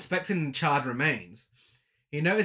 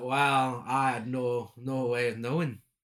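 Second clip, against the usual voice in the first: mock seductive, flirty, lifeless monotone drawl; 3 semitones lower than usual. Recapping a film scene, acting out a character's reply: mock-flirty yet dead inside. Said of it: "In a flirty yet dead inside voice".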